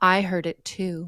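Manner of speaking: put-on small, tiny old-lady voice, slow. Retelling footsteps coming up from behind at the door, a tiny little voice. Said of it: "a little voice that says".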